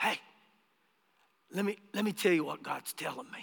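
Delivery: very quiet, soft-spoken, low-key manner. Retelling what a man would say each day, imitating a soft-spoken man. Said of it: "And he was real soft-spoken".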